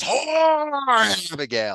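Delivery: high, swooping scream. Describing a play's climactic scene, acting out John Proctor's scream. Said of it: "so he just screams".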